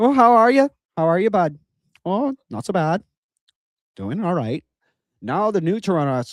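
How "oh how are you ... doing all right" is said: put-on rural Canadian TV voice. Contrasting old and new Toronto talk, first doing a Letterkenny impression. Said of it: "be like Letterkenny".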